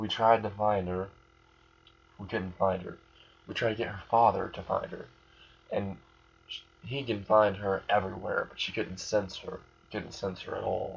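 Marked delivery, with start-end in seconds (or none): none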